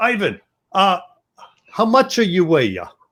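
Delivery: put-on, somewhat Italian accent. Retelling how a man asked another his weight, in a put-on, more of an Italian accent. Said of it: "more of an Italian accent".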